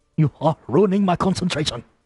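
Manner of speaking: put-on Korean accent. Playing a scientist telling an intruder in his laboratory off, in a wannabe Korean accent. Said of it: "I sound like some form of".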